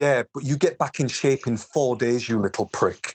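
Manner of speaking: mock withering, contemptuous, cutting tone. Retelling what a friend said back to him: imitating Miles Fernley's scornful tone. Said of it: "with the most scorn I've ever seen".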